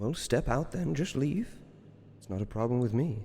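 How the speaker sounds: creature voice calling from above. Voicing the creature as it offers the players a door out: voice of an unseen creature from above. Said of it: "he says".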